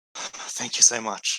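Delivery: half-panicked, barely holding panic down, steadying. Narrating a scene where a woman's horses have run off: half panicking, trying to calm down. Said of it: "sort of half panicking and sort of like trying to calm down".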